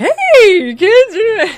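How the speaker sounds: shrill, very high, blaring, swooping, stretched-out hey. Retelling a radio line that scares Bart: Doctor Demento voice. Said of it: "Doctor Demento's voice on the radio being like".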